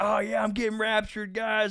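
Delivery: very high, loud, cocky show-off bragging voice. Retelling a movie scene, acting out a character getting cocky, mock-cocky voice. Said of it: "he starts like getting cocky".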